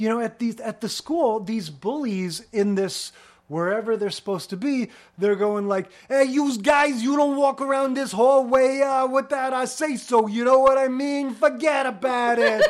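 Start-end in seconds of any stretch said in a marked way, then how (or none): 6.1-12.6 put-on loud, high Brooklyn tough-guy accent. Mocking school bullies on Happy Days, imitating their Brooklyn accent. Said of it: "they all talk like they're from Brooklyn".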